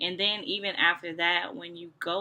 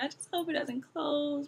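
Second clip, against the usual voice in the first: mock sobbing while talking, higher pitch; 8 semitones higher than usual. Retelling a missed dilation, imitating own crying. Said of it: "So I'm just boo-hoo crying".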